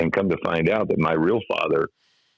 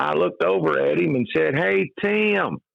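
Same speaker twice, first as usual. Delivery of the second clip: put-on high backwoods Kentucky hillbilly accent, hey drawn out; 12 semitones higher than usual. Recalling greeting a man about a radio job, in his old Kentucky hillbilly accent. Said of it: "three syllables if you do it properly".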